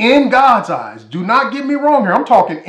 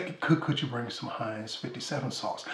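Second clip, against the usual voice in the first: very quiet, soft, breathy, polished polite voice; 9 semitones lower, 20 dB quieter than usual. A steakhouse diner retells what he first asked the waiter, put-on soft professional voice. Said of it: "in my very professional and soft inside, like I got some home training voice".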